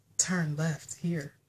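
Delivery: low, sultry navigation-style voice. Imitating the other speaker's phone GPS giving directions: imitating a seductive GPS voice. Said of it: "has a very seductive way of giving directions".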